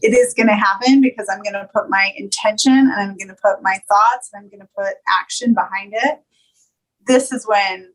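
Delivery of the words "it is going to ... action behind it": ordinary delivery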